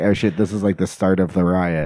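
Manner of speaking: ordinary talk, nothing marked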